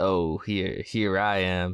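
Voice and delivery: imitated American accent. Mocking British actors who use American accents on set, imitating an American accent. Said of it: "they're there with their American accents".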